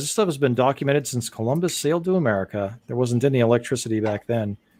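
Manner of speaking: usual speaking voice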